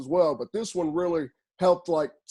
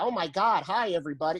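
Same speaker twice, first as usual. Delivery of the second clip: put-on small, nerdy voice.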